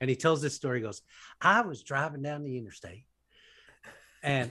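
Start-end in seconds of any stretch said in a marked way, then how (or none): 1.4-4.5 exaggerated Sunday television preacher accent, laid on thick. Retelling a TV preacher's story seen in a hotel room, doing a Joel Osteen impression. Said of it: "that's a really good accent".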